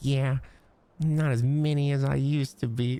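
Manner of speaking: play-acted cute little voice. The speaker repeats the other speaker's line back, imitating how it was said: mimicking an adorable delivery. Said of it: "That was adorable".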